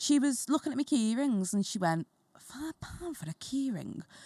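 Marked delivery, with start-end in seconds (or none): 2.4-4.0 very hushed, quiet mutter under the breath. Retelling what a lady said about the key ring price: imitating a mutter under breath. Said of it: "she said it proper under her breath".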